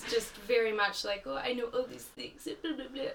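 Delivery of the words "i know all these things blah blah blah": soft, fake, put-on French accent. Speaker quotes a condescending woman, giving her a french accent. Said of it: "I'm giving her a French accent".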